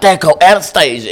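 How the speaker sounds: mock high-pitched, shrieking woman's outburst. Retelling how a lady flipped out on him in the store, imitating her screaming. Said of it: "She just started screaming".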